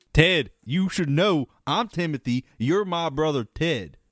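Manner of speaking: fake Southern accent. A sketch character talks to his brother, in a put-on southern accent. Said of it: "why we're doing Southern accents".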